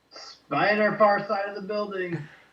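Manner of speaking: shouting. Warning the others about a spider, in character: yelling a warning. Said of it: "I yell".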